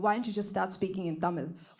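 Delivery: ordinary talk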